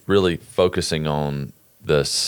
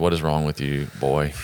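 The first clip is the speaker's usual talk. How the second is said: ordinary talk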